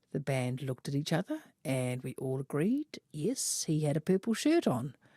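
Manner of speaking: plain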